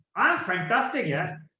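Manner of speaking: cheerful, upbeat, bright and happy tone. Showing how a happy person's tone sounds, happy tone. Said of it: "And if he's happy".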